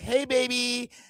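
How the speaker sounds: put-on high, soft, light girly voice. Imitating how girls sound in their regular talking voice; high treble girl voice. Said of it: "the high p- treble in their voice".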